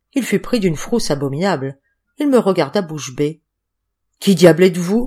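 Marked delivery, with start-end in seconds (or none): 4.2-5.1 gasping, louder. Narrator reads a frightened man, grabbed by the hero, asking who he is: gasping.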